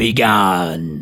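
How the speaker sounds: hoarse, menacing voice. An unseen voice answers a man calling out near the tower, hoarse and menacing. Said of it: "came the reply in a hoarse, menacing voice".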